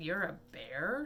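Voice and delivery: snarled, growling like a wild cat. Narrator reads a mountain lion confronting a bear, snarling. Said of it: "it snarled".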